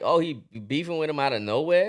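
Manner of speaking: ordinary talk, nothing marked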